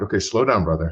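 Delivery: normal talking voice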